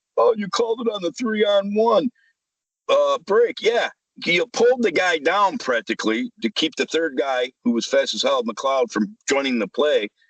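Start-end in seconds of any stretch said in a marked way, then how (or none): 0.2-3.6 high, whiny voice. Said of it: "He's whining".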